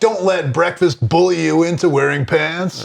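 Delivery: mock-goofy millennial advertisement-style voice. Retelling a comedian's bit about how ads talk, in a goofy millennial ad voice. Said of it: "that kind of goofy".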